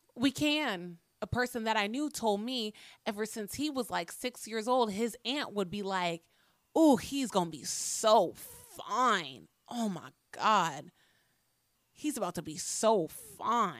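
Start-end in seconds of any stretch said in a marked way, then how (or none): 6.8-13.8 slow, lingering, lecherous, leering admiration. Retelling what an aunt said to a young nephew: imitating an aunt's leering tone. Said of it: "In that tone".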